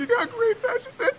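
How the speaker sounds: very high, loud, emotional tearful babble. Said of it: "It's just an emotional mess".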